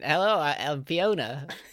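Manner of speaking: very slow, stretched-out celebrity voice, every word dragged.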